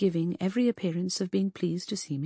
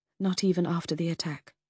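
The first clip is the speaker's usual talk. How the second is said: ordinary delivery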